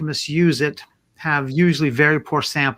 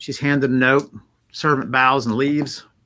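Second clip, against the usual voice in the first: plain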